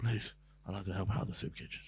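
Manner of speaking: put-on out of breath. Describing arriving somewhere after lots of walking, imitating panting. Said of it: "you're panting, just like".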